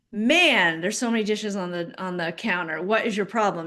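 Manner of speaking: ordinary talk, nothing marked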